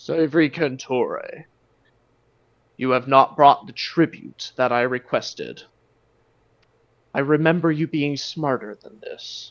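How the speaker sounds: grand, great beast dragon voice. A dragon addresses the man holding a dragon lance, booming dragon voice. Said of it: "the dragon speaks out in a booming voice".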